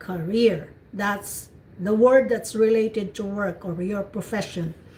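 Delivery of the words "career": career, ca- kept in background, stress on -reer. Showing learners how to say the work word: stress on REER in career. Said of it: "So ka is in the background".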